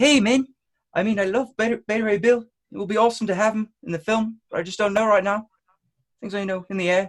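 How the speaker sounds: put-on New Zealand accent with voice pitched way up high. Quoting what Taika said about the film, in a Taika Waititi New Zealand accent. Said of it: "should I do it in the New Zealand accent?".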